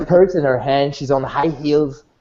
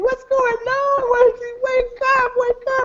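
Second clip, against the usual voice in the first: put-on very high, crying, panicked screaming. Voicing a girl shaking a frozen friend at a party: crying and screaming. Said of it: "crying and screaming".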